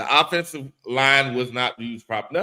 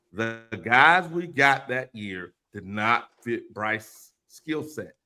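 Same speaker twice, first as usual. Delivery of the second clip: slow, deliberate, each word laid out carefully; 3 semitones lower than usual. In a debate, repeating a point so the other can hear, speaking slowly. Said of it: "I'm saying it slowly so you can hear me".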